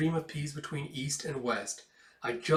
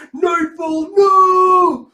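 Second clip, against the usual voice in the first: very high, very loud, shrill tearful drawn-out wail; 19 dB louder than usual. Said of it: "tears streaming down his face".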